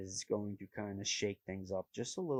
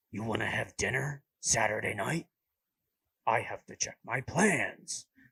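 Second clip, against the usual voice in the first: overplayed, loud, obnoxious put-on voice; 7 dB louder than usual. Trying out a voice for asking someone to dinner, in an obnoxious put-on voice. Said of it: "it sounds obnoxious".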